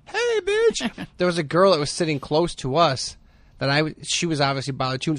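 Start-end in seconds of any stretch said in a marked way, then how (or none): 0.1-1.0 put-on yelled in a very high, girlish voice. Retelling yelling at a girl nearby, doing it as a put-on yell in a girl voice. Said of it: "yelled in a girl voice".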